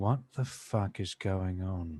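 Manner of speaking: hushed voice. A player, in character, turns to the nearest companion and asks, very quietly. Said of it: "I'll say very quietly".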